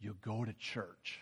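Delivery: very quiet, soft, low, slow confiding murmur. Retelling how someone leaned in with a trade secret: imitating someone talking real soft. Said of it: "he's kinda talking real soft".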